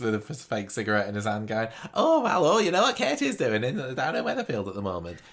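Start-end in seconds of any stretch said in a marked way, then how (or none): 1.9-5.2 put-on high, loud, swooping chatty voice. Retelling a hostage taker's impression of katie's mate: imitating an impression of katie's mate. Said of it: "doing an impression of one of Katie's mates".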